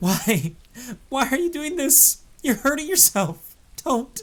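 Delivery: put-on squeaky, very high pleading tone between laughs. Retelling begging a friend to stop: imitating own laughing plea. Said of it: "I eke out in between fits of laughter".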